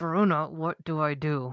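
speaking through gritted, clenched teeth. A character asking Veruna what to do, through gritted teeth. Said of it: "Through gritted teeth".

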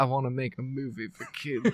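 very soft, low voice, barely audible. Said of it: "[name] was like".

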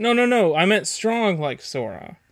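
high-pitched, mock panicked backpedaling. Retelling a scene where a character backtracks, imitating Mickey panicking. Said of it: "Mickey panics, and he's like".

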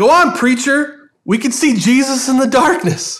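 high-pitched calling-out yell. Retelling someone in a dark church calling from the back: imitating someone yelling. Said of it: "someone yells out".

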